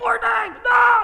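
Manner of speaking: mock angry outburst. Acting out a man dipping in the river, getting mad: acting out a furious man. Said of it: "He's so mad".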